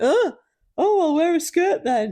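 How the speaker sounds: mock offended outrage, pitched way up and loud.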